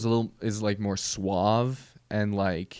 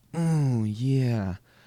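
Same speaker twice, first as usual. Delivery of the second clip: smooth, seductive tone; 2 semitones higher than usual. Contrasting two singers, doing the first one: Usher impression, suave and sexy. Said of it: "Usher had more like".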